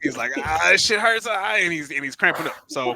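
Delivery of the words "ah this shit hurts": mock sudden, high, pained yelp. Retelling how someone with a bad cramp started screaming: imitating someone screaming. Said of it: "he starts screaming".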